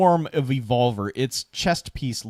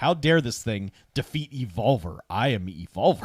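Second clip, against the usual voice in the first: put-on robot voice with an offended tone; 2 semitones lower than usual. Retelling what the defeated robot thinks: imitating Evolver the robot, offended. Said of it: "He's like".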